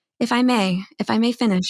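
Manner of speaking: very soft, gentle voice. Speaking as your intuition would in a debate, very soft voice. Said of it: "it's like this very soft voice".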